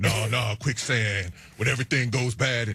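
put-on low, deadpan voice. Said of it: "That's my Keanu Reeves impression".

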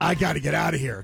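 sounding panicked. Recalling being shoved inside by a bouncer at fifteen, retelling own panic. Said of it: "Just panic, just setting in".

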